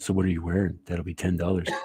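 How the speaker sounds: mock sultry, sexy voice. Joking that a co-host should work a phone sex line: imitating a sexy phone sex voice. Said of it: "You got that sexy, sexy voice?".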